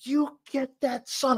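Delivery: mock high, shrill, fired-up, passionate scream. Retelling how a football mom cheered from the stands: imitating someone screaming. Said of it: "She would scream".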